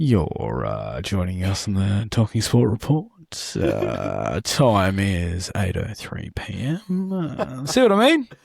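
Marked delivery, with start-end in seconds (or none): 0.0-7.1 calm, soothing, soft, very low host voice. Co-host demonstrates how the hosts sound when opening the show, in a soothing voice. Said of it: "we've just got that soothing voice".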